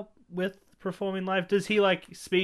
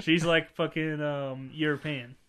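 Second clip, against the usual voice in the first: usual speaking voice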